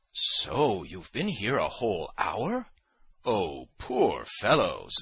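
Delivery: sarcastic, ironic, swooping drawn-out cry. Speaking to a man who was left waiting, he cries out ironically. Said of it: "Zverkov cried, ironically".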